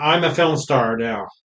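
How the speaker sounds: ordinary talk, nothing marked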